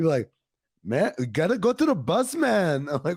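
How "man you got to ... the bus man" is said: put-on casual talk in a slow Brazilian accent. Retelling catching himself talking like Leandro Barbosa: Leandro Barbosa accent. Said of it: "you'll find yourself talking like him".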